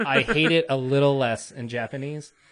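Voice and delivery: ordinary talk, nothing marked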